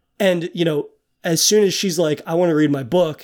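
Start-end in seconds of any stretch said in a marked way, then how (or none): none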